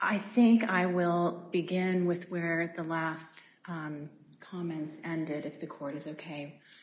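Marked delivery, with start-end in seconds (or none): 3.7-6.6 soft, faint, too-quiet speech. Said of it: "Could you speak up".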